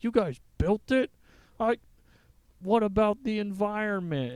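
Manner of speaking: high, loud, indignant, outraged outburst.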